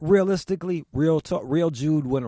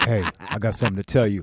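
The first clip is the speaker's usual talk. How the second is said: mock solemn tone, lower pitch; 7 semitones lower than usual. Retelling how a friend broke news: imitating a friend sounding solemn. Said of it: "I was trying to make you sound solemn".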